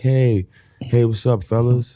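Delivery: put-on relaxed, laid-back, calm, slightly high voice. Retelling a guy who kept greeting them, imitating a very calm guy. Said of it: "He was so calm".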